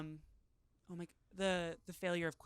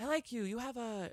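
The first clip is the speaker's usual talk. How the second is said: ordinary delivery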